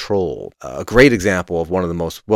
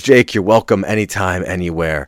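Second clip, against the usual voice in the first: ordinary delivery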